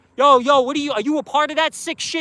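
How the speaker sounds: confrontational, accusing, angry yelled outburst. Retelling how the speaker's ex confronted another woman; retelling an angry yell. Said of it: "She's going off on her".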